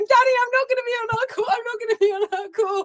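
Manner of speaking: mock panicky, very high-pitched voice. Retelling a call from David the day before: imitating David's panicked call. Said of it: "this panicked call from you".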